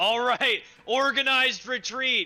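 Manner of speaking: loud, authoritative shouting. Ordering everyone to pull back during a fight: commanding shout to troops. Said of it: "I'll also command everyone".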